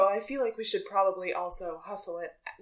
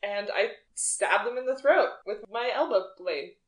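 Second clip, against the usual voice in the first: plain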